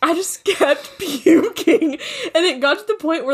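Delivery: high-pitched, slow, giggling laughter through words.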